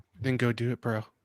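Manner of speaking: imitated whisper. Retelling a movie scene where one character whispers to another: imitating a whisper. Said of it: "and then he whispers in his ear".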